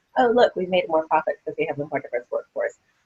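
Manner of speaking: usual speaking voice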